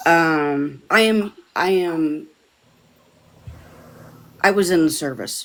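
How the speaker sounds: voice strained, fighting back emotion. Sharing a hard service memory with others, fighting back emotion. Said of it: "I'm really fighting with this right now".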